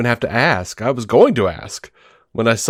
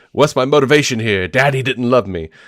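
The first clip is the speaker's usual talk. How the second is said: dopey, idiotic cartoon character voice. Showing how an actor voices a character who is an idiot: Clayface voice from Harley Quinn. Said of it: "he does the Clayface voice from Harley Quinn like this".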